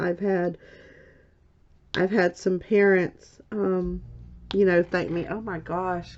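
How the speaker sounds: tearful speech, crying while talking. Teacher recalling parents who came back to say thanks, crying while talking. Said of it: "I did not intend to cry today".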